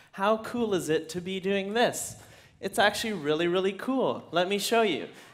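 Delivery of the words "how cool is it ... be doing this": usual speaking voice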